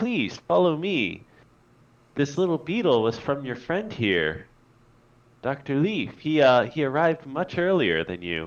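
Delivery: put-on polite young lady voice. Narrator voicing a young lady who leads an adventurer inside: young lady's voice. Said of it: "She beckons you".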